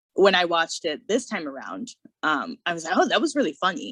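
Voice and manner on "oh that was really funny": ordinary delivery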